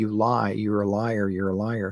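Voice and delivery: ordinary talk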